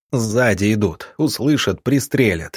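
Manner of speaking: ordinary delivery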